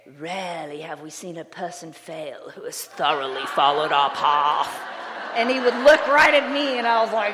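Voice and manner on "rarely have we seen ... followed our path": put-on low, old stage-style Shakespearean English accent. Quoting a man he later asked to sponsor him, in a shakespearean english accent. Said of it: "He spoke with this really Shakespearean English accent".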